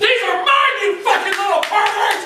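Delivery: very high, shrieking mother voice.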